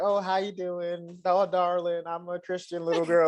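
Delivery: put-on high, innocent Alabama country-girl voice. Describing the girl who will win such a man: imitating an Alabama country girl. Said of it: "country girl from, like, Alabama who's just like".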